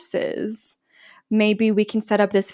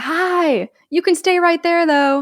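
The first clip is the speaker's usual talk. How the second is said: mock high, loud scream, projected to carry far; 8 semitones higher, 5 dB louder than usual. Retelling what someone screamed across the arena to a man, imitating a scream. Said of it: "And Emerald screams".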